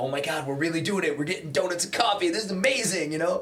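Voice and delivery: giddy, excited gush, high, loud and fast. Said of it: "and like".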